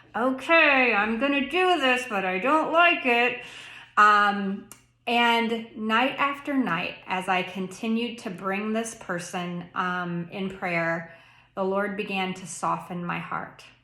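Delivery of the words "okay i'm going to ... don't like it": put-on, grudging, through gritted teeth, raised pitch. Retelling a first night of praying for someone to forgive: imitating speaking through gritted teeth. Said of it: "kinda through gritted teeth".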